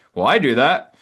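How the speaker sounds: mocking, teasing, derisive put-on voice. Imitating a listener who objects to the claim; mocking imitation of a listener. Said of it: "sorry that if I just imitated you with that with that mocking voice".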